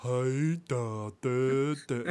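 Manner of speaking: very slow, dragged-out, dumb and dopey drawl. Answering how the cartoon duck talks: dumb-sounding Baby Huey voice. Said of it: "really dumb sounding kind of thing".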